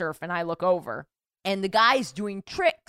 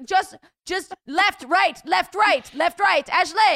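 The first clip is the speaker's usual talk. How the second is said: mock French-accented yelling, much higher, slower; 11 semitones higher, 5 dB louder than usual. Retelling a windsurfing instructor shouting at the speaker mid-lesson: imitating screaming, French accent. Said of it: "He kept screaming at me and he had this French accent".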